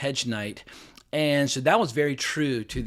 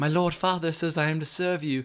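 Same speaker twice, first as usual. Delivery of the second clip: tiny, high, squeaky pipsqueak voice; 5 semitones higher than usual. Recapping a scene, speaker quotes a character's line in a little pipsqueak voice. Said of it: "little pipsqueak voice of".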